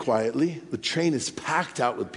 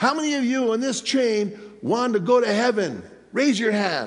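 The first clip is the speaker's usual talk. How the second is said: put-on heavy, thick Spanish accent, pitched up; 7 semitones higher than usual. Quoting a preacher addressing the train crowd, in a heavy spanish accent. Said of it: "he has this real heavy Spanish accent".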